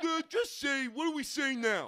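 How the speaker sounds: loud, booming, slow, drawn-out dumb voice. Acting out God answering the people's question: dumb voice for God. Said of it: "I have to give him a dumb voice".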